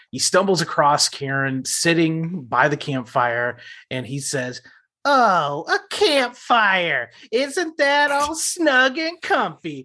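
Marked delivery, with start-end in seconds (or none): 5.0-9.8 very high, lilting, swooping, drawn-out sing-song. Doing a Professor Hinkle quote from finding a campfire: Professor Hinkle impression. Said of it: "gonna go also with a Professor Hinkle".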